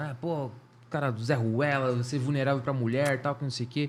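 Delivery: ordinary delivery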